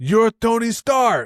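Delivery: high-pitched put-on Russian accent. Quoting the movie line he shared when you asked him for one, in a put-on Russian accent. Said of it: "in like his Russian accent".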